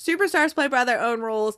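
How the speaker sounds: normal talking voice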